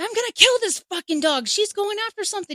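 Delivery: angry, loud, high yelling. Retelling what she yelled at a dog she thought was chasing an animal, retelling a yell. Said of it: "what are you yelling at?".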